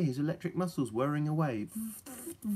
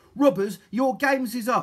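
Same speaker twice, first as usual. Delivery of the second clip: severe, stern, high-pitched, very loud shout; 6 semitones higher, 9 dB louder than usual. Polly confronts the robbers on their boat, sternly. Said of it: "said Polly sternly".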